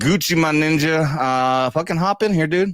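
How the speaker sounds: ordinary talk, nothing marked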